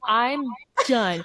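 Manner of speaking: mock irritated, exasperated voice. Imitating a driver finally fed up after a race: imitating an angry, fed-up Charles. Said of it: "That was my impression of Charles".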